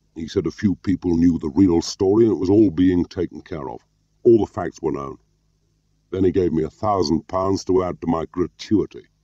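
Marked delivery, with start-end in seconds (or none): none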